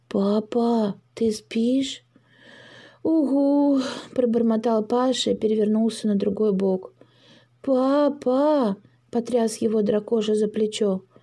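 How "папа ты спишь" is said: quiet, soft voice, much slower. At night a little dragon creeps up to his father's bed; quiet question. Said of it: "тихонько спросил".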